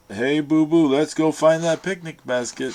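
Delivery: loud cartoon bear voice. Listing old cartoons, the speaker jumps into a Yogi Bear voice. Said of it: "With Yogi Bear, he's like".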